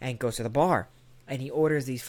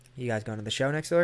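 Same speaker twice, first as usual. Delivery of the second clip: ordinary talk, nothing marked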